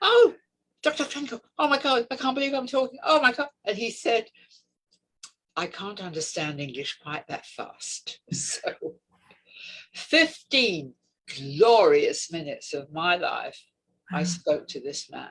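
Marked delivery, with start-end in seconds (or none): 0.0-3.5 very high, starstruck chipmunk squeak, rattled off fast. Retelling a phone call where a man introduced himself, imitating own excited chipmunk squeak. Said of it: "I sound like a chipmunk".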